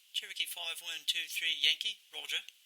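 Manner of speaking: soft, put-on British accent. Demonstrating a radio call, playing the reply, British accent. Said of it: "you're getting my very best British accent".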